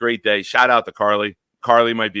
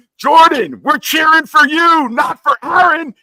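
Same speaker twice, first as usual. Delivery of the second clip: very high, shrill, loud screaming shout; 8 dB louder than usual. Retelling calling out to a quarterback from the crowd, retelling a scream. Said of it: "I scream".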